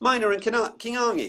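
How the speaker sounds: high, stiffly British, mangled pronunciation of a name. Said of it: "better than me saying".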